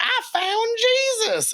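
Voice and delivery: very high-pitched cartoonish voice. Retelling a Robot Chicken bit: imitating the Robot Chicken guy. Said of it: "there's the one guy who goes".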